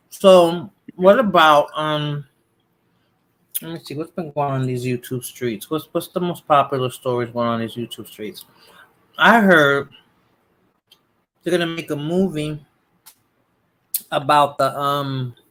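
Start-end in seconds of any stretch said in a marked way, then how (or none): 9.1-15.3 talking with mouth full, chewing. Speaker chats to viewers about YouTube stories while eating, talking with mouth full. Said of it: "I'm I'm I'm eating ginger".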